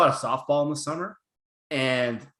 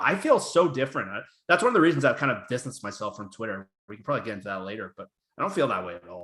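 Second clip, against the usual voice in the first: plain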